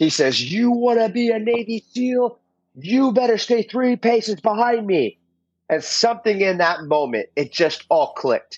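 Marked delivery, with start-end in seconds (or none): 0.4-5.2 pitched-up scream, held in. Retelling what a man screamed in his face: imitating someone screaming. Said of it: "he's screaming in my face".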